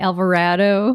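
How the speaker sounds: Midwestern pronunciation with Midwestern-style vowels. Explaining how the accent slips out, the speaker says a name in midwestern pronunciation. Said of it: "occasionally the Midwestern comes out".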